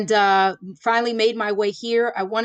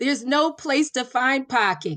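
put-on Boston accent, best attempt; 3 semitones higher than usual. Asked for their best impression of a boston accent, the speaker does a boston accent impression. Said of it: "Let me hear your best impression of a Boston accent".

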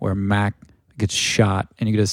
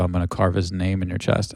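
usual speaking voice

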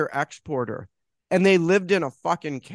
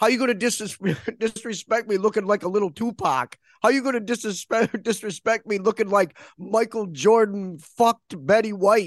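put-on Italian-accented New York voice; 4 semitones higher than usual. Describing a bit where a guy confronts random passersby, New York guy impression. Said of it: "this New York guy, and I think he's Italian".

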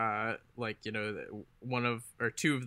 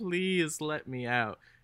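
play-acted high, drawn-out, whiny, mewling voice; 5 semitones higher than usual. Retelling a character begging from inside a locker: imitating a mewling plea.

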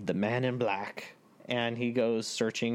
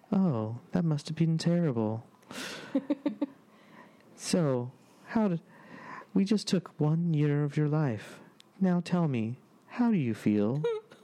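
mock calm, deadpan delivery; 4 semitones higher than usual. Impersonating an actor in one of his best roles: imitating a calm deadpan voice. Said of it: "he just talks with this very kind of calm, deadpan kind of voice".

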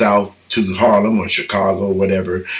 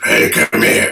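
put-on frightening voice, lower; 10 semitones lower than usual. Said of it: "he had a voice that was just frightening".

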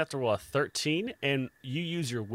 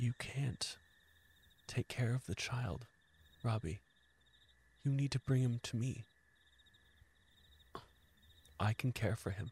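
soft, half-whispered voice; 8 dB quieter than usual. Voicing a presence speaking in a player's mind: half-whispering in the mind. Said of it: "As Guilty whispers in your ear".

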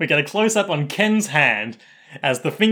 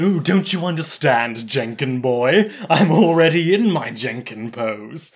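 affected, put-on villain voice. Suggesting how Rohan should talk in this episode, doing a Maximilian Pegasus affectation. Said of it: "a sort of Maximilian Pegasus affectation".

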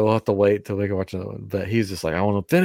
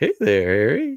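unsettling, creepy, high-pitched voice; 5 semitones higher than usual. Imitating a character greeting Harry in the bathtub: creepy Moaning Myrtle voice. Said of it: "Makes it super creepy".

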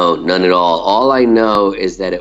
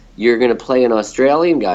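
ordinary delivery

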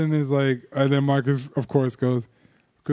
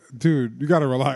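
ordinary talk, nothing marked

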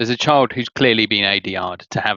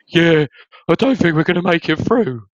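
put-on high voice of a young teen; 8 semitones higher, 4 dB louder than usual. Discussing Lord of the Rings, speaker mocks a teenager character's high teenager voice. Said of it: "that high voice that's just come out of that teenager".

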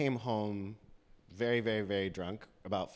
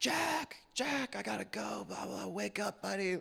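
put-on yell, much higher; 12 semitones higher than usual. Speaker acts out yelling through a door to wake a sleeping buddy; retelling a yell. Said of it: "and I'm like yelling".

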